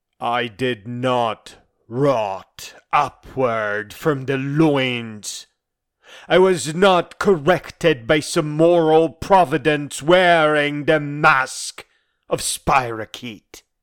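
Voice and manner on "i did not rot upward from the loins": very slow, deliberate repeated words. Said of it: "Let me repeat it slowly".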